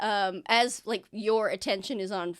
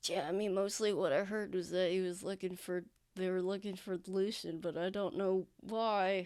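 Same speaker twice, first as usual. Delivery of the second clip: whispering out of mouth corner, quieter; 2 semitones lower, 9 dB quieter than usual. Voicing a character looking over his shoulder to report news: whispering. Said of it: "whisper out of the corner of his mouth".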